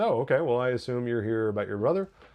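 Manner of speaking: dry, unbothered, just-enough sarcastic reply. Retelling a character's reply to the mayor: imitating a sarcastic tone. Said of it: "her level of just enough sarcasm".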